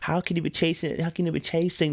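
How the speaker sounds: put-on sugary, cutesy, sweet little voice. Speaker retells how a woman questioned them, in a mock sweet little voice. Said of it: "she put on that sweet little voice".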